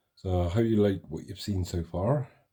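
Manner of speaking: put-on West Country accent. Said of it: "as they say in the West Country accent".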